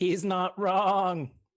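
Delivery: put-on high, loud sheep character voice. Voicing a character who gives a thumbs up: sheep's voice. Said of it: "says in the sheep's voice".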